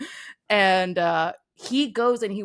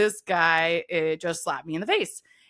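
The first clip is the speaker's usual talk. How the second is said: ordinary talk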